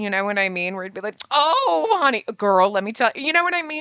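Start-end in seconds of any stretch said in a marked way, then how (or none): 1.3-3.1 slow drawl with words drawn out. Imagining a game character as a drag queen best friend: Chalet as a drag queen. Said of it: "he's got that drag queen energy".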